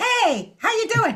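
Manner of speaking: tiny, very high, squeaky cartoon mouse voice. Describing a big horn player to a listener, imitating the horn player's voice. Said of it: "Now it sounds like Mickey Mouse".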